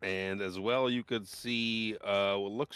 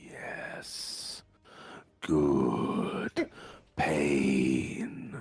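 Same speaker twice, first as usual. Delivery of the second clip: eerie, creepy whisper, close to the ear; 6 semitones lower than usual. Describing a game scene, voicing a creepy dungeon figure: creepy whisper in your ear. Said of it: "you just hear a whisper in your ear".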